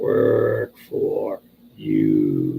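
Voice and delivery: very deep, rough, croaky frog voice. Role-playing a character who offers someone work, in a froggy voice. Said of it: "I'm trying to do this with a froggy voice".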